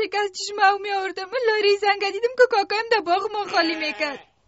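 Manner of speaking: tearful, speaking through tears. Daughter telling her mother what her uncle did, crying. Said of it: "گریه نکن".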